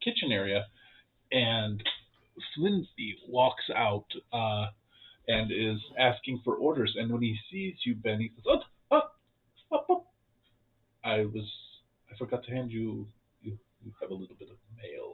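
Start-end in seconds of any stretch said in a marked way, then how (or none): 8.5-15.1 very quiet, hushed, under-the-breath mutter. Game master voicing Slinsby, slipping a player some mail at breakfast: very quiet, under his breath. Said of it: "he says this very quietly, like under his breath".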